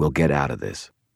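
ordinary delivery

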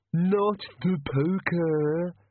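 high pleading whine, poker drawn out. In a story being read aloud, the bogeyman answers, whining. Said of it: "whined the bogeyman".

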